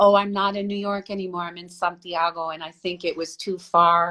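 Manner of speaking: usual speaking voice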